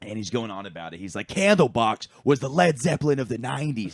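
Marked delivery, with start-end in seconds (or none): 1.3-3.9 put-on, loud, high-pitched screaming rant. Retelling what a man at the bar said about a band: imitating someone screaming. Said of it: "screaming at the bar".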